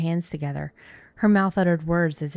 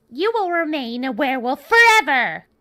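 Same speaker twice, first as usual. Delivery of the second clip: shrill, high, loud screeching witch voice; 9 semitones higher, 7 dB louder than usual. Reading a story, voicing the woman who cursed the narrator: screeching voice. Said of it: "her screeching voice".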